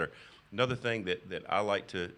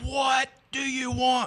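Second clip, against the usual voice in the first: very high, drawn-out shriek at full volume; 9 dB louder than usual. Retelling a woman finally answering his third call: imitating a woman screaming. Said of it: "Just screaming to the top of her lungs".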